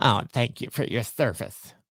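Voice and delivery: patronising, condescending, talking-down tone. Complaining how bureaucrats address people who served, mock-condescending bureaucrat. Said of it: "how condescending".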